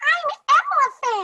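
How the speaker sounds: squeaky, very high cartoon elephant voice. Showing a child the elephant voice he chose: high elephant voice. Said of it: "this elephant right here has a high voice".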